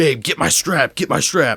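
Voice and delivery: angry, high-pitched, demanding screaming. Retelling how a man kicking their car screamed: imitating someone screaming. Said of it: "kicking our car, screaming at us".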